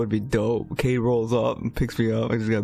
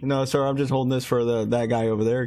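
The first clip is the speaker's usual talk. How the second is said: ordinary talk, nothing marked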